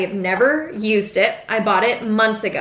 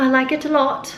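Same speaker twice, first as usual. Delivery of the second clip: bad, pathetic, fake put-on British accent; 4 semitones higher than usual. Commenting on a finished eye look, pathetic british accent. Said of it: "That was my pathetic British accent".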